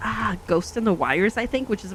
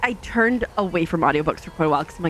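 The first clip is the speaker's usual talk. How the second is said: ordinary talk, nothing marked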